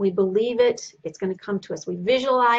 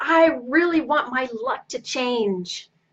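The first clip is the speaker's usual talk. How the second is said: very drawn-out, heartfelt, passionate and joyful. Explaining how to wish for your luck to change, said with passion and joy. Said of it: "You've got to say it with passion and joy".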